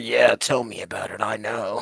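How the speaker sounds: very slow, hushed half-whisper. Playing a character who leans to Mister Gibson's ear: half-whispering in character. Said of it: "kinda whisper in his ear".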